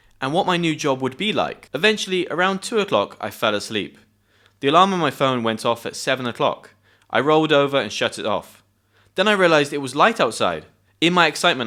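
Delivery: ordinary delivery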